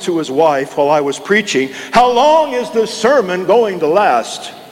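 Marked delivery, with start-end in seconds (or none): 1.9-4.5 loud, raised, very high-pitched, carrying voice. Preacher recalling a hard-of-hearing man asking his wife mid-sermon: retelling a loud question. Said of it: "said in a loud voice".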